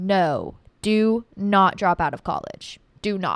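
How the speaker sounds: stern, dead serious, swooping emphasis. Speaker gives listeners advice about college, stern and serious. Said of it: "I'm saying this very sternly and seriously".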